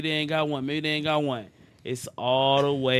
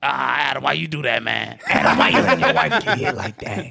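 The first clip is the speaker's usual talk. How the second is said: put-on raspy high voice, louder; 4 dB louder than usual. Imitating Crip Mac after others say his voice is raspy and high: raspy high Crip Mac voice. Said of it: "He has a raspy Raspy and high".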